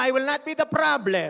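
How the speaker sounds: strong, loud emphasis. Leading the congregation in a declaration, asking them to say it louder: saying it louder. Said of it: "Lakasan mo".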